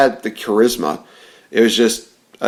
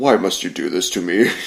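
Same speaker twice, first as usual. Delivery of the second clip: deep, low, dramatic space villain voice; 4 semitones lower, 4 dB quieter than usual. Show how close the other speaker's remark came to Darth Vader, in a Darth Vader voice. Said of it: "almost as close to Darth Vader".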